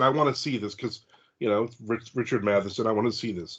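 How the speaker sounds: ordinary talk, nothing marked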